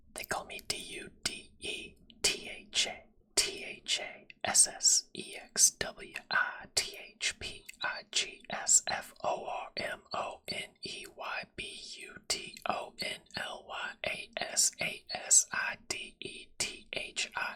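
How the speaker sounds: soft, breathy ASMR whisper, spelled letter by letter. Doing an asmr cover, whispering. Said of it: "I'm gonna whisper for it".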